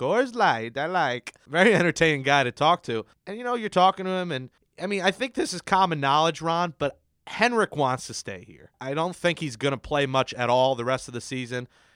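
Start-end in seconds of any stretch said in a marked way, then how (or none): 0.0-1.3 slow, drawled, put-on Swedish-sounding accent. Retelling what a friend from Sweden said: imitating a Borat accent. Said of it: "it's kinda like that Borat accent".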